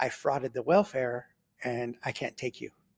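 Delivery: leaned-in, hushed whisper. Retelling what a woman whispered to them during visitation, imitating her whisper. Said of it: "she leans over and she whispers to me".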